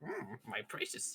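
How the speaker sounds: croaky creature voice, whispered. Meaning to sound like Gollum, the speaker slips into another voice: Yoda voice. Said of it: "that's my Yoda".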